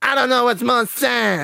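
squeaky put-on voice, pitched way up and loud. Reading out Keemstar's comeback post aloud, Keemstar voice. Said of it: "I'll do it in his voice".

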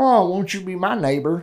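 mock American Southern accent. Doing a quick impression of Mister Rogers: Mister Rogers with Southern accent. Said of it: "Why did I put a Southern accent on Mister Rogers?".

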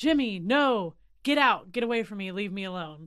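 mock yelling. Recounting what an inmate was heard yelling at night, retelling a yell. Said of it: "he would sometimes yell".

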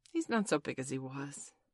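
plain

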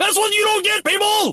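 mock, shrill, very high, ranting yell. Doing a favourite impression of a man ranting about a conspiracy, mock yelling. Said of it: "And I'm yelling now!".

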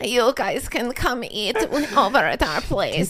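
put-on Russian accent. Imitating the older Russian lady's accent: put-on Russian accent. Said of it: "she talk like this".

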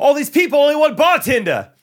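put-on thick Jersey accent, loud yell, pitched very high. Retelling what a man yelled back at him: very jersey accent. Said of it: "just very Jersey".

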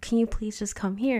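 mock-traumatized, pleading voice. Retelling begging a woman to come over after seeing a man outside, retelling a traumatized plea. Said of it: "Because I was like so like traumatized".

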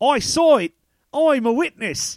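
shoddy put-on British accent. Describing film extras, the speaker imitates the last guy: bad fake British accent. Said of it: "the shitty British accent like we are doing".

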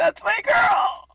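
put-on shrill, very high, loud, weepy, tearful gush. Retelling how mom reacts to the podcast: imitating mom crying. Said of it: "she's just crying".

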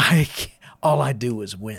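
put-on drunk voice, grinning and gloating. Retelling how a drunk card player grinned and gloated while winning: imitating a grinning drunk friend. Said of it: "he would grin and he would go".

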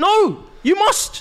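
mock stern insistence, high and slow.

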